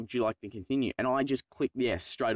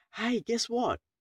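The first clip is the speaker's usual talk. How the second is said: very high, bright, chirpy fake cheer; 11 semitones higher than usual. Retelling how a woman announced a failed test, mimicking a fake-happy voice. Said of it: "did that happy thing like".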